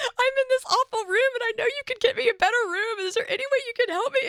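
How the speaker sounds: put-on pleading voice on the verge of tears. Retelling how she asked him on the phone for a better room, almost in tears. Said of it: "And I'm like almost in tears".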